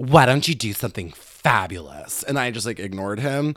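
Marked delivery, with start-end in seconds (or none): 0.0-2.2 over-exaggerated, mocking, over-the-top caricature voice.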